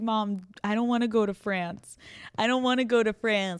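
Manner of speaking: loud put-on dog voice. Voicing the sleeping dog Bruce talking to Mom: voicing Bruce the dog. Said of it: "He's like".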